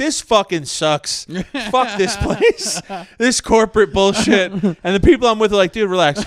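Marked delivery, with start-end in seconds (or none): 0.0-4.5 put-on, toned-down, mildly angry ranting outburst. Retelling when he started going off while on mushrooms, retelling a loud rant. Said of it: "I just start going real loud".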